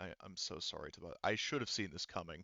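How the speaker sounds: very weak, feeble, soft and rushed. Voicing an injured, confused woman as she apologizes, in a very weak voice. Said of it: "in a very weak voice".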